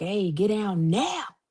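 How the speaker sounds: stern, slow, drawn-out mom voice. Retelling calling out to someone running off, the speaker turns on that mama voice. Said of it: "I just turned on that mama voice".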